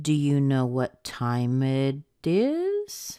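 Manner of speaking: yes-no tune, pitch rising on final is. Lesson on yes-no questions: rise at the end on 'is'. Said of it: "we don't hear a fall at the end. We hear a rise".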